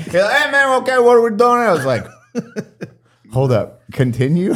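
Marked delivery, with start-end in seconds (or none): 0.3-1.4 very high, fast, put-on Spanish accent.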